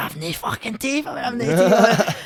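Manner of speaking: high, loud, shrieked, drawn-out wailing scream. Retelling a nightmare about losing teeth: imitating own screaming. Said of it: "screaming and all that".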